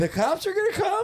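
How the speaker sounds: mock very high, eager, thrilled kid voice. Retelling a movie scene, a kid asking excitedly: imitating an excited kid. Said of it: "super excited".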